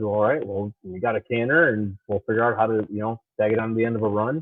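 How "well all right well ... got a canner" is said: usual speaking voice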